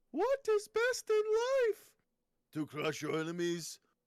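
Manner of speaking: put-on Austrian accent, very high, swinging and swooping. Doing another person's voice on request, put-on austrian accent. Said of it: "I'm going to do the voice of another person".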